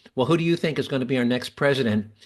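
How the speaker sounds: ordinary talk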